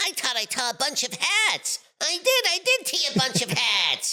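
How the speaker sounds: cartoon canary voice. Running through the voices he does: Tweety Bird voice. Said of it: "Tweety Bird".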